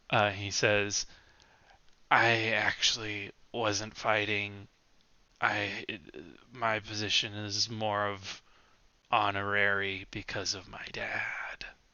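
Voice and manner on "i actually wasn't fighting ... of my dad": put-on loud drunken attempt at whispering. Leaning in close to the listener, a drunk man confides: drunk whisper at full volume. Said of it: "also at full volume because he's drunk and can't whisper".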